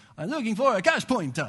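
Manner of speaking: fake Italian accent. Retelling what they said to someone in Italy, in a fake Italian accent. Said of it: "I did it in my Italian".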